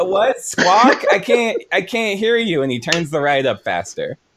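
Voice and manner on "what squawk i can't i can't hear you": high, mock-innocent, playing-dumb tone. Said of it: "he pretends he's like".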